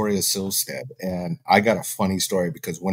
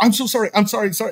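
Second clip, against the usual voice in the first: very high, freaked-out, acted panicked voice; 13 semitones higher than usual. Retelling how she apologized after finding her dancing naked, imitating own panicked apology. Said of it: "And I freak out".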